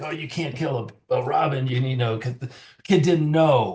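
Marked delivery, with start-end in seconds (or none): 0.0-1.7 put-on upset voice. Retelling a buddy's dad reacting to a killed robin: imitating an upset dad. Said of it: "his dad wanted to get kind of upset".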